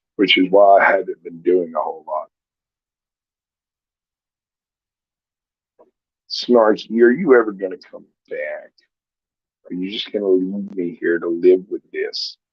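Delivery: barely able to talk, voice almost gone. Welcoming a guest to the show, then calling for someone to come back: barely able to talk. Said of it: "I can barely talk".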